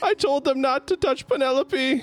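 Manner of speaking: distressed, pitched way up. Game master voices a man whose pig the party is roasting: upset pig owner. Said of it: "you notice that the door to the church opens and a very disheveled and bruised man limps out of the church a little bit. And when he sees that you're roasting a pig, he's quite upset and hurries over. Oh".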